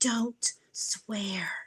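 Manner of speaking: muttering under breath. Retelling a phone call where a lady warned against swearing: imitating someone muttering under breath. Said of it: "the lady under her breath goes".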